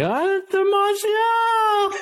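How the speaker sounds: high, slow, stretched-out screaming sports commentator call.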